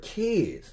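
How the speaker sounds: put-on kids stressed high and hard. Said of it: "You see how I stressed that last word".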